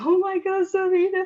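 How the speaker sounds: fake sobbing. Acting out a coaching client who starts crying in a session: mock crying. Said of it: "start crying without stopping".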